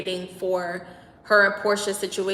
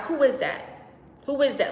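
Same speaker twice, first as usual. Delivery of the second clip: mock angry, high-pitched, squaring-up tone; 6 semitones higher than usual. Retelling a dispute, the speaker reenacts confronting someone screaming from afar: retelling an angry outburst. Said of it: "I got mad".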